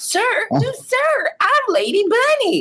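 very high voice, grandly swinging and swooping around. Retelling a border crossing at five AM: Lady Bunny impression. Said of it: "doing my Lady Bunny impression".

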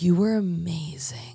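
put-on whisper. Retelling what a woman whispered in the speaker's ear at a show, imitating a whisper. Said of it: "she whispers like right in my ear".

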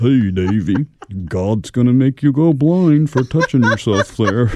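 loud, booming cartoon dog voice. Describing how a man sounded, the speaker jokes in the Goliath dog voice. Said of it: "he kind of sounded like the dog from the Davy and Goliath cartoon".

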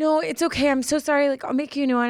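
high, flustered, panicky, freaked-out voice. Retelling a worker's apology after dropping an order: imitating someone freaking out. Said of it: "she was, like, freaking out".

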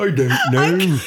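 high, loud, slow hippo voice. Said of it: "That's a hippo".

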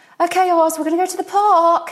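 really high-pitched put-on voice. Retelling what she said on walking in with the speaker's son, really high-pitched voice. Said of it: "in a kind of really like high-pitched voice".

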